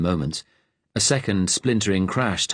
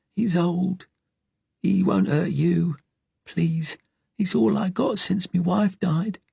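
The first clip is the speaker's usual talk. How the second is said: pleading, begging whisper, higher pitch; 11 semitones higher than usual. Reading an old man begging armed strangers to spare his dog: pleading whisper. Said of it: "he whispered pleadingly".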